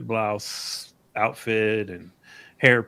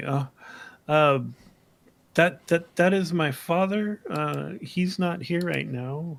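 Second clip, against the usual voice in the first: nervous, anxious, higher voice; 6 semitones higher than usual. Voicing a character who is asked for the owner: nervous. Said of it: "she gets noticeably nervous and her eyes kinda dart around".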